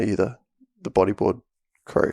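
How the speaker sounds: choppy, hesitant, halting broken English. Retelling a man sent over from the other side of the island, imitating broken English. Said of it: "speaking like sort of like broken English".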